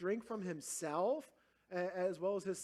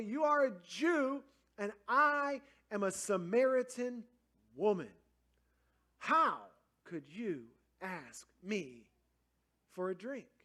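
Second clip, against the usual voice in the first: slow, unkind, dismissive, rude tone; 3 dB louder than usual. Retelling how the Samaritan woman said it to Jesus: imitating an unkind tone. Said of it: "she didn't say it in a nice way".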